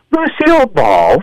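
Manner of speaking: voice breaking mid-word. Talking about Lucille Ball supporting other performers: voice cracking. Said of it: "my voice cracking for no reason right then".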